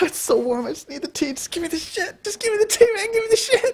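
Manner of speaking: very high, strung-out, messed-up whining rabbit voice. Reviewing a movie and acting out the rabbit's lines: imitating the messed-up rabbit. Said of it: "he's all like".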